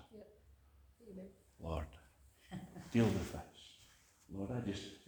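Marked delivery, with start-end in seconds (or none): 1.6-4.8 quick, rushed, hushed whisper, close to the ear. Showing how to lean over and whisper to the lord: whispered prayer. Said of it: "Just lean over and whisper".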